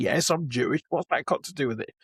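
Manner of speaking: ordinary talk, nothing marked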